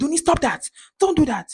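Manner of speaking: put-on angry scolding voice, pitched high. Retelling how a child's mother got mad at them: imitating an angry mother. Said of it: "the mother of that child got mad and was like".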